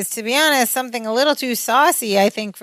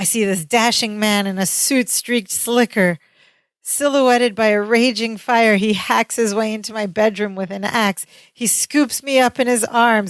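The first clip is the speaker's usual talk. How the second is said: ordinary talk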